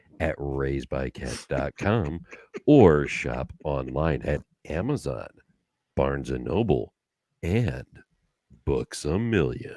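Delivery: deep radio announcer delivery. Speaking to listeners in his put-on NPR announcer voice. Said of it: "his N P R announcer voice".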